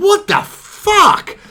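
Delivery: mock shrill, very loud, very high furious yell. Retelling slamming the brakes on during an argument: imitating own heated outburst. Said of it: "'cause I got really heated".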